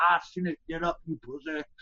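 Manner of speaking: put-on angry, mad voice with Southern drawl accent. Quoting what a referee said to him, in a southern accent. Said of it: "Because he talks all Southern".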